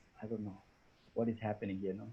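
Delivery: very low, soft mumble. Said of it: "the third guy who is going to say".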